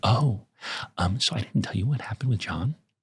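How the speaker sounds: hushed, soft, secretive whisper. Imitating how Sarah asks a mildly serious question: imitating Sarah whispering. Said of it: "she switches to whisper mode".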